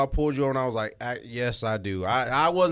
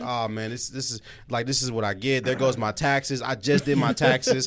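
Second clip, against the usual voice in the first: ordinary delivery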